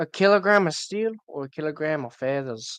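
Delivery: put-on Scottish accent in Glaswegian style. Quoting a famous bit from a Scottish comedian, in a Glaswegian Scottish accent. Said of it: "was that a Scottish accent?".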